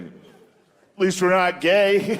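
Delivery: very slow, drawn-out, smug American voice.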